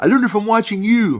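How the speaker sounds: very high, very loud, shrill yell. Retelling an old commercial where a son yells back at his father, imitating a yell. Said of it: "yells at him".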